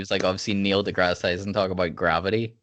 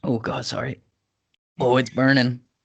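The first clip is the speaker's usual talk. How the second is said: choked-up choking voice, high and drawn out; 5 semitones higher, 3 dB louder than usual. Drinking whiskey while recording for listeners, it goes down wrong; choking on whiskey. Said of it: "The whiskey went down the wrong pipes".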